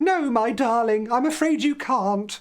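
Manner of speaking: put-on goofy, silly, high-pitched grandma voice. Telling a story, the grandmother answers the child asking to stay, in a silly grandmother voice. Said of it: "let's do silly voices".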